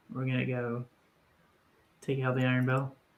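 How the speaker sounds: hushed, quiet, rushed aside. Asked about the plan, speaking in character to a companion: quiet. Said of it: "I'm saying this quietly".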